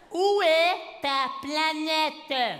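put-on slow, high, drawn-out taunting kid voice.

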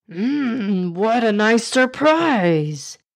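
very slow, drawn-out exclamation, "what" stretched. A character sees an elephant drop three fish to the floor, exclaiming. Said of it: "Exclaimed Billu Khan".

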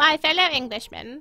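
put-on upper-class English accent. Showing off accents, addressing fellow Englishmen in the Queen's upper-class English accent. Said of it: "I do an okay accent of the queen".

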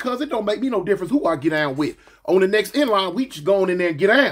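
ordinary talk

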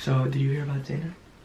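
soft, secretive half-whisper. Your little brother just got home from school, so you keep talking while half-whispering. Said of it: "I gotta whisper".

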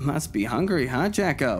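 sarcastic, teasing sing-song. The speaker teases someone who just devoured his meal, sarcastic. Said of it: "I said sarcastically".

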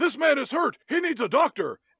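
put-on, very high-pitched, loud shouted yell. Retelling a movie scene where a man calls for help: imitating someone yelling. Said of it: "he yells out".

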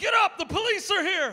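high, loud, urgent hollering yell. Speaker retells yelling to a man on the ground as police arrive; retelling a yell. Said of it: "And so I'm yelling".

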